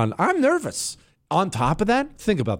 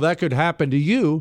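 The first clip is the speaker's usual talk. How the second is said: ordinary talk, nothing marked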